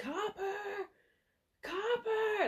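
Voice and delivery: put-on very high-pitched old man accent. Recalling a film, the old man calling his dog, imitating the old man's accent. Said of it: "in his accent".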